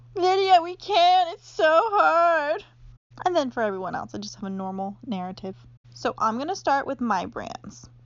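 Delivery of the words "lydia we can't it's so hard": very slow, high, loud, hard stretched-out whine. Speaker shows the voice she gives lazy girls in her narrative, imitating whining lazy girls. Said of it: "they're whining".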